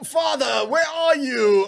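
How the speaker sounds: fake high British accent. Retelling a scene from the new version, doing Simba with a British accent. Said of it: "Why is he British?".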